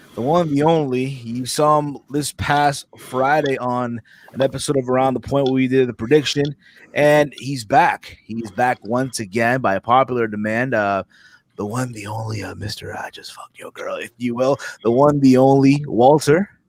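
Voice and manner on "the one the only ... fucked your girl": hushed stage whisper, very soft. A host introducing a returning guest to the audience, whispered aside. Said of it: "you just whispered that part".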